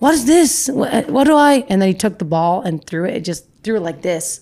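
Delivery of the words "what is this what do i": put-on very slow, drawn-out, high German accent. Retelling a man's confused reaction to a thrown ball, imitating his german accent. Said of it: "in his accent".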